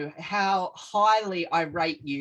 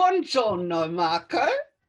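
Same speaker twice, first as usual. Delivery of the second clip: deliberately terrible, exaggerated put-on Italian accent; 4 dB louder than usual. Podcast guest greeting the host marco in a very bad italian accent. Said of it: "That was my attempt at a very bad Italian accent".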